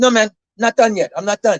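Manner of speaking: heavy put-on Swedish accent, laid on thick. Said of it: "I'm trying to emulate his Swedish accent".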